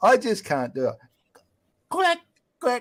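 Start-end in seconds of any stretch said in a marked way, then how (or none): 1.9-2.8 quacking duck voice pitched up very high. Asked for a villain line, trying a Donald Duck voice. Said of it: "I'm trying to do, um, Donald Duck".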